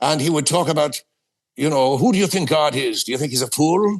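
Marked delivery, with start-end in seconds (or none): 2.0-4.0 put-on stock Irish accent. Recalling a priest from his childhood questioning him, in Monsignor O'Keefe's Irish accent. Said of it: "a lot of them talked like this".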